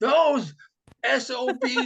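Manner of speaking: shrieking, very high, drawn-out screaming outburst. Retelling a locker-room tirade heard through the door: imitating Vitale screaming. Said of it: "he starts right in".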